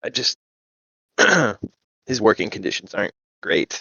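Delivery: confidential, between-us confiding tone. Confiding in character about his working conditions: hushed voice. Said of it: "I'd kind of speak in a hushed voice".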